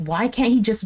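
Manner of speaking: ordinary delivery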